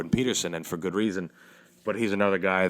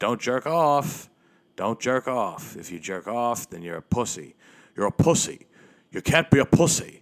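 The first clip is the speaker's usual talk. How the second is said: preachy, hectoring, repeated scolding tone; 4 semitones higher than usual. Imitating a man who screams at men about jerking off: imitating his voice. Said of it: "I can't do his voice".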